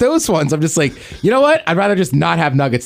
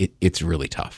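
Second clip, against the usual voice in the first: put-on near-tearful coach voice, on the verge of tears; 12 semitones lower, 9 dB quieter than usual. Retelling how the coach sounded after the loss: imitating a coach almost crying. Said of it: "almost crying".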